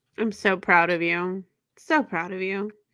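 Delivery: sarcastic praising in a mothering tone. Answering the other speaker's claim to own real books, motherly sarcasm. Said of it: "sarcasm in your tone? ... That motherly sarcasm".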